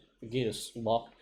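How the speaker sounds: ordinary delivery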